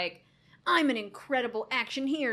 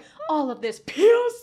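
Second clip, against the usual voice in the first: put-on loud, wheezy, breath all used up; 6 semitones higher, 11 dB louder than usual. Retelling how a woman said a word, imitating her wheezing. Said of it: "She said piss and full on wheezed".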